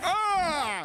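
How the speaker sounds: very high, long, drawn-out yelp of pain. Retelling being stepped on by the mom: imitating own past yelp. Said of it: "I'd be like".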